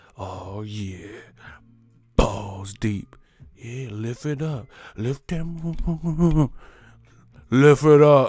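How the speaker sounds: loud, very slow delivery. Imitating a porn actor who doesn't ask politely: Wesley Pipes impression. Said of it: "Wesley Pipes don't just ask you. He's go".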